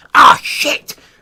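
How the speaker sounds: shrill, very loud, high-pitched goblin shout. Game master voicing a goblin shouting during a fight, high-pitched goblin shout. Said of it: "one of the goblins in his high-pitched voice shout".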